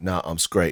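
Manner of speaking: very soft, quiet, understated, low-key delivery. Retelling how the other speaker turned and spoke: imitating someone speaking very quietly. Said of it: "and then he turned and very quietly said".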